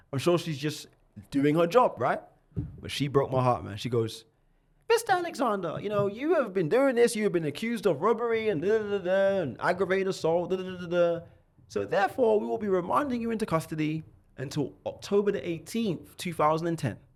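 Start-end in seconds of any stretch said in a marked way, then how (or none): 4.9-16.9 put-on old lady voice, pitched up.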